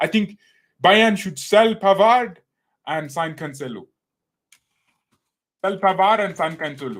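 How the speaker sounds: loud, high, put-on Indian accent. Arguing bayern should sell pavard and sign cancelo, in a put-on indian accent. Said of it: "see now I'm I went Indian".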